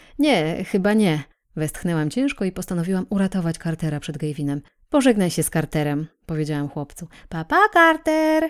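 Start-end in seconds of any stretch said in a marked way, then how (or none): 7.3-8.5 said through a smile, pitched up. A little boy waves goodbye while leaving the kitchen; smiling goodbye. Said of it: "Powiedział Gavin z uśmiechem".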